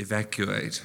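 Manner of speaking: soft whisper, close to the ear. Whispering into the captain's ear to make him evacuate: whispering in character. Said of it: "I whisper in his ear".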